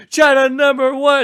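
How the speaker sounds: shrill, very high, blaring yell at full volume. Retelling what an older brother shouted: imitating a shout. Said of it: "so he'd be shouting it too".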